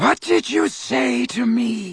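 chilling, cold, very high-pitched tone. Reading a story; he faces a kneeling, quaking figure, in a high, cold voice. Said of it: "His voice was high and cold".

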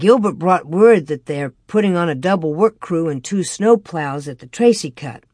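ordinary talk

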